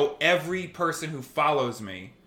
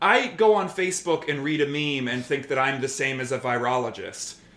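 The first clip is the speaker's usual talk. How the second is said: normal talking voice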